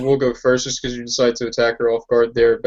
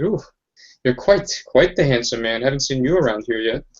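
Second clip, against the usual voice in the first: playful, teasing, coy, flirtatious voice. Narrating a scene, voicing a slightly undead woman flirting with you: flirtatious. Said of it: "she begins to kind of flirt with you".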